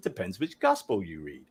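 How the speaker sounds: put-on American accent with lots of swoop. Summarizing the resurrection story, the speaker slips into a Bart Ehrman impression. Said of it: "That's my best American accent".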